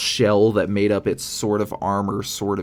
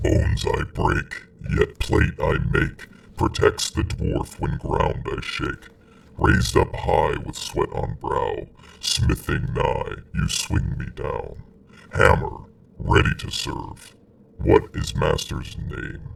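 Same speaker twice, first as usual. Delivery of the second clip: deep, resonant low voice with rough edge; 5 semitones lower than usual. A massive metal creature speaks out of gaps in its metal: resonant, low booming voice. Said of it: "a resonant, low voice booms out".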